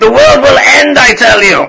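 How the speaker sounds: high, very loud, shrill, booming, wildly swinging shout. Voicing a character speaking of the town's threats, shouting it out. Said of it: "He kind of shouts that out a little louder".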